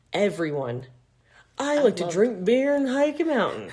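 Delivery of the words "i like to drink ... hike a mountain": put-on made-up Southern accent, pitched up. Mocking dating app profiles, quoting them in a put-on Southern accent. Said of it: "I don't know why I did a Southern accent".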